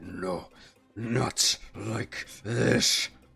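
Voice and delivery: muttering under breath. A character staggers, drops to one knee and steadies himself, muttering. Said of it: "is just muttering like".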